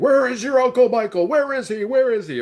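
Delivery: mock shrill screaming, very high, repeated. Retelling Loomis's therapy technique with a child: imitating Loomis screaming. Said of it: "screaming at them".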